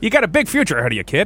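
put-on old-fashioned, vintage delivery. The group agrees to all talk in old-timey voices; speaker addresses a kid, old-timey voice. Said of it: "In those old-timey voices".

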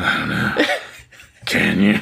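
rough, creaky would-be sexy voice, horror-movie creepy. Show how you always answer when asked for a kiss, saying it in a sexy way. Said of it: "You sound like Freddy Krueger".

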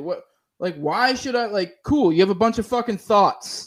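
ordinary talk

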